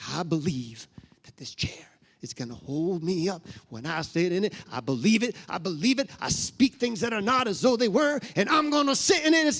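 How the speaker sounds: fake, put-on Southern accent. A New Englander trying to fit in, declaring belief in a put-on southern accent. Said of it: "that's my southern voice".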